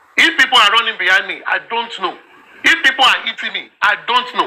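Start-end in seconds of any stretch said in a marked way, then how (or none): none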